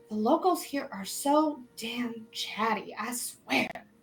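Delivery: hushed, muttered half-whisper under the breath. Voicing an elven man half-whispering to a halfling: half-whispering under his breath. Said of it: "under his breath whisper to the halfling".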